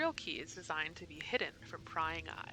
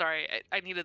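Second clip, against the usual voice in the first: ordinary delivery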